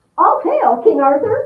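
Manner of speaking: piercing, cracked, very high, very loud cry. A horribly ugly lady hails King Arthur, in a shrill, cracked voice. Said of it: "she cried in a shrill, cracked voice".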